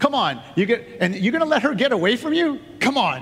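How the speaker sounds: loud yelling.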